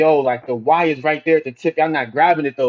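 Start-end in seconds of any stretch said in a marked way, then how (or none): none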